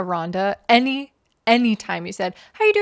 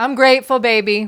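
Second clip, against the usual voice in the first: put-on offhand church lady voice, louder; 5 dB louder than usual. Retelling the choir member's offhand reply: imitating Aranda's throwaway grateful. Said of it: "this was, like, a throwaway".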